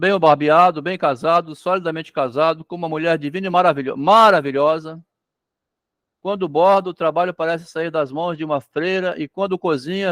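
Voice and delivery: ordinary talk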